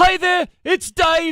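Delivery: high put-on British voice. Recalling how a musician introduced himself, in Dave's high-pitched British voice. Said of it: "high-pitched British voice".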